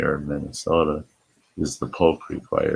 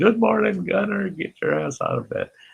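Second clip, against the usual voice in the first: acted shrill, very high, hoarse, raspy holler. Recounting a morning visit to wake someone, retelling a yell. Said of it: "I'm yelling".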